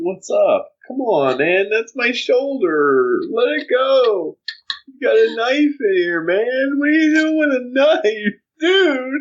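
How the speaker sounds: put-on acted-out drunken rambling, very high, very slow. Acting out a surgery patient talking to the doctors, mock drunk talking. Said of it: "Like you're really drunk".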